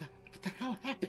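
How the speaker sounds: soft whisper, barely above the breath. Whispering a question to another character through a window: whispering in character. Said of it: "so I'm just gonna whisper at him".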